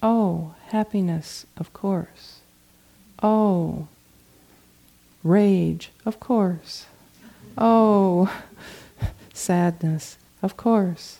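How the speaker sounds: put-on sing-song voice. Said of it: "had a kind of sing-songy voice".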